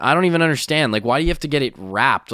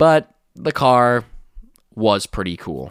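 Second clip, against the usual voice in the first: usual speaking voice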